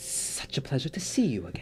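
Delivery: looming serpent-folk creature voice. Voicing a looming Yuan-ti standing over a player: Yuan-ti voice. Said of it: "looming Yuan Ti".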